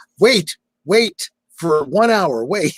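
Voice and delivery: long, high, drawn-out hollering yell. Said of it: "why are you yelling, "Wait"?".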